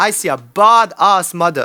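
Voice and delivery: Jamaican accent impression. Quoting a teammate's pep talk from a movie bathroom scene: imitating a Jamaican movie character. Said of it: "you do do a really good impression of that".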